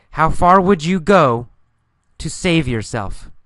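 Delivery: far stressed, clear pause after go before to save.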